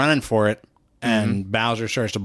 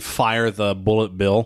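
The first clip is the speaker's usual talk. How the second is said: ordinary talk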